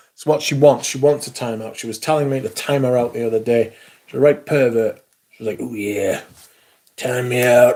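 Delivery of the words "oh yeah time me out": put-on slow Texas cowboy drawl. Quoting what she said the other day, in a Texas cowboy voice. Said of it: "That's what she sounds like. She sounds like a cowboy".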